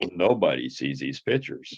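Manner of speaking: very low, resonant baritone. Retelling what Peter said to you about pictures, in Peter's deep baritone voice. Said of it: "in his deep baritone voice".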